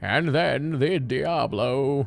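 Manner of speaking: deliberate, unhurried storytelling voice. Starting story time for a viewer: Deckard Cain voice from Diablo. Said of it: "I'll do my, uh, Deckard Cain voice from Diablo".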